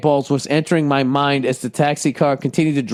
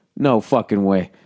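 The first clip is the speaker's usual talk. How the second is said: normal talking voice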